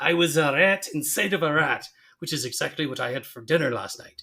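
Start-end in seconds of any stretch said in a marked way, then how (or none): 0.0-1.9 clumsy, badly done put-on Scottish accent. Quoting a cartoon line in a terrible Groundskeeper Willie voice. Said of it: "It's a terrible Willie".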